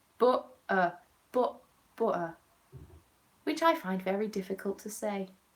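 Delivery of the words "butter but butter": put-on 'butter' said with a Nottingham accent. Imitating how a Nottingham-born coworker says a word, Nottingham accent on 'butter'. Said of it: "born and bred Nottingham says butter".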